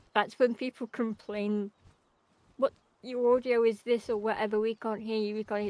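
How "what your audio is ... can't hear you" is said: plain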